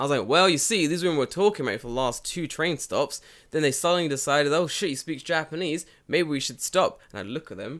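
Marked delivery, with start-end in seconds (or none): 0.3-7.0 full-volume, pitched-up voice. Speaker retells explaining the train story to a friend, retelling a loud explanation. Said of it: "I very loudly explained".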